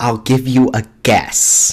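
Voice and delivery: put-on strong French accent. Retelling a man's answer about where he's from, thick French accent. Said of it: "the French accent comes out super thickly".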